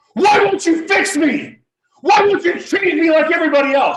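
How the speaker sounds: very high, very loud, shrill angry screaming. Retelling a moment of getting super angry: retelling angry screaming at god. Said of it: "I just start screaming at God".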